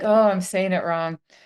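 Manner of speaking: ordinary talk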